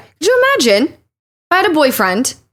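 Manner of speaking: touch of British accent. A parent of two young kids talks about family life, sounding slightly English. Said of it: "You sounded English there".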